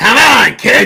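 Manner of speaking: put-on very loud, shrill, high-pitched, gravelly old voice. Retelling a little kid being rushed at a urinal: imitating an old gravelly voice. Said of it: "some, like, old gra-, gravelly voice goes".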